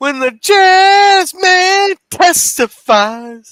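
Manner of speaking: high, slow, shouted jazz-man wail.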